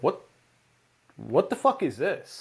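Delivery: mock offended disbelief, swooping outburst. Retelling being served a strange dish: retelling being offended. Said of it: "I was so genuinely, like, offended by it".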